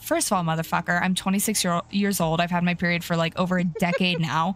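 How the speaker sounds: ordinary talk, nothing marked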